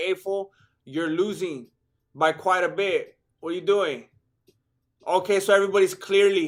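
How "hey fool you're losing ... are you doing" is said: ordinary delivery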